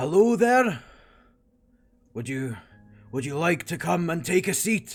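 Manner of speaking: calling out loudly. Narrating a man who calls over to the group, shouting across to the group. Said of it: "And he shouts over".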